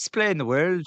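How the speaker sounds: put-on high, loud Irish accent. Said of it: "that's bloody Irish".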